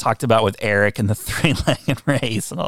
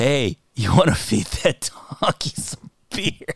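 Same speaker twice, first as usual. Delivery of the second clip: speech broken by laughter. Quoting a favourite line from a comedy bit, laughing while talking. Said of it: "I can't stop laughing to say the line".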